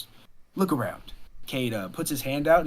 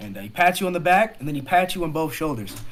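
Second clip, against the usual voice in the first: usual speaking voice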